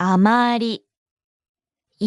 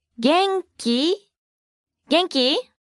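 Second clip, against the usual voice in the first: genki said casually with a high rising tune. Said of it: "Please note the rising intonation".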